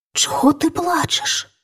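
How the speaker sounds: hushed, breathy whisper under the breath. The youngest princess speaks to Vitek, who sits beside her crying; whispering. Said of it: "пошепки спитала його принцеса".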